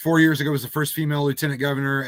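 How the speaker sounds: rattled off very fast, too quickly.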